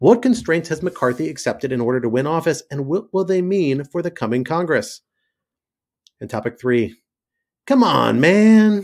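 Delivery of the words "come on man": put-on Scranton accent with Delaware influence. Introducing the third topic in a put-on voice: Biden impression. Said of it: "Trying to make that sound as Biden-y as I can".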